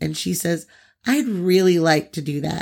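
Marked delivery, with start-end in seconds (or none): 1.1-2.6 mock sweetest, most innocent voice. Retelling a little girl's reply heard in a recording, sweetest most innocent voice. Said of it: "In like the sweetest, most innocent voice possible".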